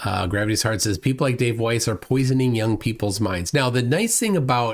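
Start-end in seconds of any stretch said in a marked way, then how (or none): none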